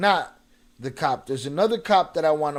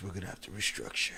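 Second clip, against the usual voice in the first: breathy, hushed whisper under the breath, man's voice; 8 semitones lower, 13 dB quieter than usual. Repeating a quote, copying another speaker's Peter voice. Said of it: "the Peter voice".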